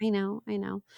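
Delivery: mournful, downcast, sad and sorrowful delivery. Answering another speaker who says the tree won't be spared: sad. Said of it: "You just sounded so sad".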